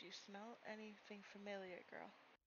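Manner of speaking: hushed, barely-there, very quiet half-whisper. Voicing a character squatting down beside Maya: half-whispering very quietly. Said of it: "whisper very, very quietly to Maya".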